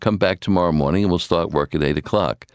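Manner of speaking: plain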